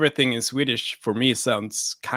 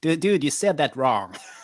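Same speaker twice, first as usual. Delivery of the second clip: put-on nerdy-sounding voice in an American accent; 3 semitones higher than usual. Imagining a nerd on the sidelines correcting an actor, Comic Book Guy nerd voice. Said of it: "How come when you have a nerd voice".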